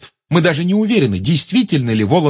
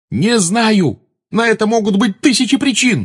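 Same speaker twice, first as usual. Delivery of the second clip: sharp, snapping tone, pitched up; 6 semitones higher than usual. Pressed with questions, he answers the girl by yelling at her. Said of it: "завопил на нее Гарри".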